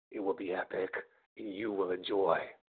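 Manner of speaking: eerie, creepy, very low and hushed voice. Promoting his upcoming video show to viewers while drinking beer; creepy voice. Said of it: "that sounded creepy".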